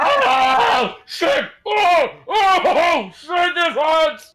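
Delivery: screaming in character voice. Voicing a character held by wolves, screaming in character. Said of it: "screaming is a free action".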